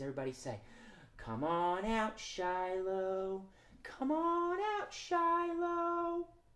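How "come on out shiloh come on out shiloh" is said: very soft, slow, drawn-out, sweet coaxing voice. Calling a shy squirrel puppet out: sweet little voice. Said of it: "in our sweet little voices".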